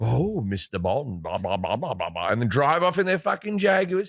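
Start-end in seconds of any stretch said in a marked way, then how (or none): 0.0-2.3 put-on low, villainous movie-villain English accent. Mocking villains in spy movies, doing a bond villain impression. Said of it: "twirl around with a cat".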